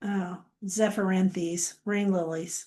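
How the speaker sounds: bored, slow, flat, uninterested level delivery. Announcing the next item right after reading a quote, bored. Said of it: "Why did you say it like that? All bored".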